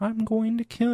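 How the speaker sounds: very high, tiny little evil AI voice.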